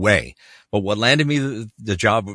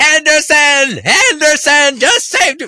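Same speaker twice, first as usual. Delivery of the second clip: high, loud, drawn-out sports announcer goal call; 9 dB louder than usual. Retelling a commercial read done as a sportscaster: Foster Hewitt hockey goal call. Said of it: "Foster Hewitt calling the Paul Henderson thing".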